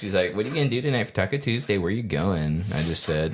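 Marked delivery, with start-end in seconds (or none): 0.4-2.6 mock teasing, flirty, playful tone. Retelling how a woman in the elevator asked about Taco Tuesday: imitating someone flirting. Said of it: "she was flirting".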